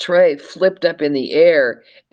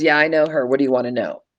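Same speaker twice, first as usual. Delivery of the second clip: mock hostile, fast, hard-edged, angry tone. Retelling how a woman answered when asked about a lady, imitating her hard, mad tone. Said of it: "Just that kind of voice".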